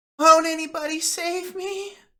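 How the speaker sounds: put-on very high, slow, recognizable child's voice. Voicing a creature that looks at the players: recognizable child's voice. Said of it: "in this, like, recognizable child's voice".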